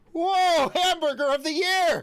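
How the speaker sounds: exaggerated, overexcited shout, very high. Retelling a fast-food order and the reaction to it, UAV Futures impression. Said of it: "my impression of UAV Futures".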